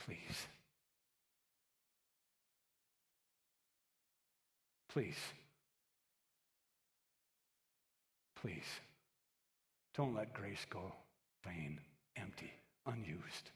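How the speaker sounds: put-on hushed, breathy, whispered pleading, repeated. Preaching, voicing those who beg week in and week out: acting out pleading. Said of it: "they're begging".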